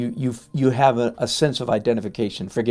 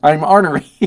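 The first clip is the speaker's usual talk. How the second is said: ordinary delivery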